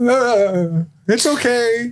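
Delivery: put-on old man voice, very high, long drawn ah. Retelling a game scene, voicing an old man waylaid by orcs: acting as an old man. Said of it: "and the old man's like".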